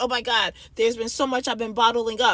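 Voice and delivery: ordinary talk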